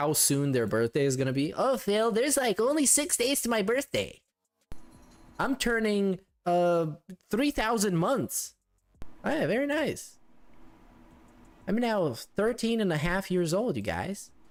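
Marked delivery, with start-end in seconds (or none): 1.5-8.5 sarcastic mocking voice, pitched up. Imitating a chat viewer announcing an upcoming birthday, mocking a chat viewer. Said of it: "people that announce every day in chat".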